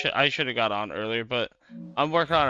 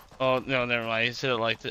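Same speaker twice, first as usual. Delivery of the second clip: ordinary delivery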